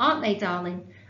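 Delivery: ordinary delivery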